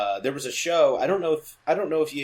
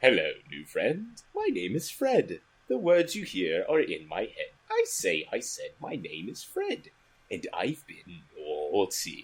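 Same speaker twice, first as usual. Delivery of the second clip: sinister, eerie, low, swooping creepy voice; 4 semitones lower, 4 dB quieter than usual. Quoting a character from a favorite show, the speaker does a put-on creepy character voice. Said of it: "he just had that kind of creepy voice for him".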